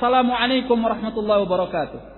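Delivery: glad, enthusiastic tone. Acting out someone greeting a brother with salam: joyful, spirited greeting. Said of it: "dia mengatakan dengan suara yang penuh semangat, kegembiraan bertemu dengan saudaranya".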